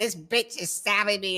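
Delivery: loud, desperate screaming cry. Describing a man screaming for backup while attacked, retelling a scream. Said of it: "He's like screaming all over you".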